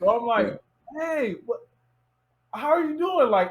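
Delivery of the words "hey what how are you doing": high-pitched, starstruck, geeked-out excited voice. Retelling greeting her when you heard her voice, acting out your own excitement. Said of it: "I'm geeked out".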